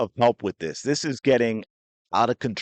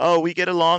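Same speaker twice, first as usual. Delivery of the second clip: evasive, dismissive tone, pitched up; 7 semitones higher than usual. Mocking a player's answers when asked about a rival: imitating Angel Reese. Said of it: "she's like".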